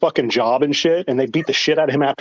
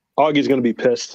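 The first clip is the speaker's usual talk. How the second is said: ordinary talk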